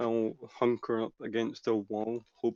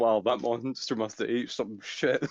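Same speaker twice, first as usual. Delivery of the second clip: usual speaking voice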